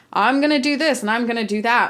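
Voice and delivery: ordinary talk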